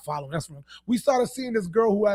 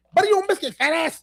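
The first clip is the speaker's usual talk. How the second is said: sudden, high-pitched blurted outburst; 7 semitones higher than usual. Retelling a quote from a woman with Tourette's talking to newscasters: imitating a woman with Tourette's. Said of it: "She goes".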